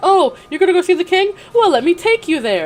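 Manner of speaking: high, loud, petty, sneering, mocking witch voice. Recapping a story, quoting the witch mocking the heroine, imitating a mocking witch. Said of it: "she's just like mocking her the entire time".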